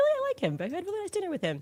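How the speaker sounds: very high, fast mocking falsetto, ditzy woman voice.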